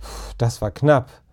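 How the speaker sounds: plain reading voice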